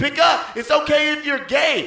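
yelling.

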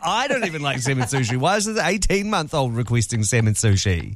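ordinary delivery

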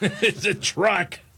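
slow, high, stern and firm parental tone.

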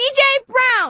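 very high, shrill, high-pitched shout. Repeating one's name after being told to speak louder: yelling. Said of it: "You don't need to yell".

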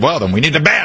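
high, fast, mocking voice. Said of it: "he's a Democrat".

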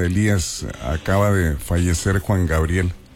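plain

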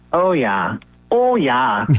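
Fargo-style local accent. Chatting about summer on the peninsula, the speaker does an accent: put-on Fargo accent. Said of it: "Now I'm doing my accent from Fargo".

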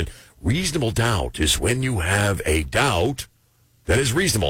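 thick, laid-on-thick put-on New England accent. Imitating a guy talking to a jury: imitating a thick new england accent. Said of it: "I'm not trying the accent anymore".

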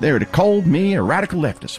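Texan-accented speech. Candidate speaking in a played campaign clip, with a Texas accent. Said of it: "he's got this Texas accent there".

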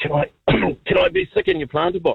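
put-on spluttering choke. Telling a story, quoting what a man asked him; imitating choking and spluttering. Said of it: "he's choking and spluttering".

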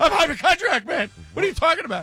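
very high, frantic, rushed hysterical outburst. Suggesting ways to voice a hypochondriac, trying a hysterical take. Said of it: "You could be like hysterical".

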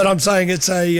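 plain

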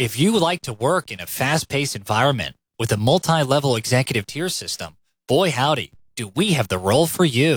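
polished, professional corporate recruiter pitch voice. Talking with another speaker, showing off a put-on LinkedIn speech voice. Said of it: "I'm using my LinkedIn speech".

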